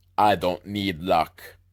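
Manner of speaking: put-on German accent, very low and slow. Retelling how Rudolph answers the starter at the mountain top, Rudolph in a German accent. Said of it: "that was kind of a German accent I just did there".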